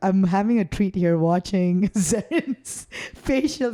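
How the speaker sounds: words spoken through laughter.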